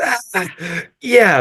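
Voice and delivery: very high, oddly gleeful, excited and happy voice. Retelling how he replied after being thanked: imitating someone excited and happy. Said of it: "but, like, excited, like, happy, like, very weird".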